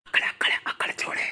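hushed, unvoiced whisper.

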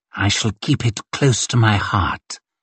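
ordinary delivery

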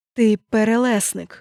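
whispering almost inaudibly. Leaning toward the narrator, a man answers in a barely audible whisper. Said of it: "ледь чутно прошепотів".

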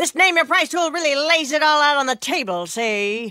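put-on old-time 1930s movie mobster voice. Impression while describing a pricing tool: 1930s gangster voice. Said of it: "this is my impression of a 1930s gangster".

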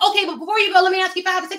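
fast pushy salesman voice. Retelling a sales call she got, the speaker imitates the fast-talking sales caller. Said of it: "talking all fast".

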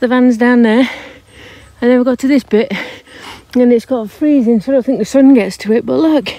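out of breath. Speaker walking up from the van to show the spot, out of breath. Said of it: "Excuse me being out of breath".

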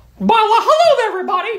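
put-on cartoon mouse voice. Greeting everyone in a skit as Mickey Mouse: Mickey Mouse voice. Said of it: "My name is Mickey Mouse".

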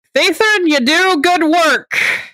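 loud high calling out. Heading back, Aelon calls out to Thathan; saying it really loudly. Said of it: "Aelon just says really loudly".

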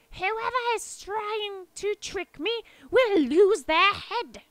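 slow, loud, high-pitched voice. A queen, suspecting a trick, addresses everyone in the room: raised voice. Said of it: "she raised her voice so that everyone could hear".

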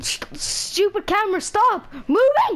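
loud scream.

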